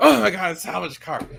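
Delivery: put-on scandalised, outraged cry, high and creaky. Retelling how buyers reacted to a salvage-title car: imitating outraged buyers. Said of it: "people up in arms that were outraged".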